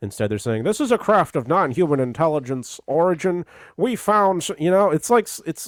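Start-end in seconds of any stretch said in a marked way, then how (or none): 0.6-4.5 fake old-time transatlantic announcer accent, much higher, slower. Mocking how officials describe a found craft, bad 1940s transatlantic announcer accent. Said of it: "like a bad like transatlantic accent announcer from the nineteen forties".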